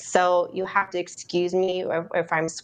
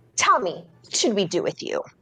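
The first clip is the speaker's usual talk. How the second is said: put-on stern teacher tone, strict and firm. Retelling how a first grade teacher spoke, imitating a stern teacher's tone. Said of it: "she tells me in this tone and in this exact way".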